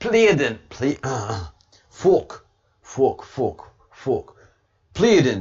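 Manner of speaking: stumbling, slow, loud Scottish accent. Asked to say a word in a Scottish voice, giving it a try: Scottish accent. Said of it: "that would sound so awesome in your Scottish voice".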